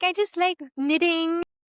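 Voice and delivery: sweet cutesy voice. Teasing the other speaker about being cutesy: imitating Rachel's sweet voice. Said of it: "you have the sweet voice".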